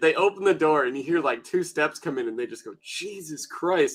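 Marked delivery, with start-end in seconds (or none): 2.8-3.9 soft, whispered muttering under the breath. Retelling a stranger who opens the door: imitating muttering under breath. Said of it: "under their breath".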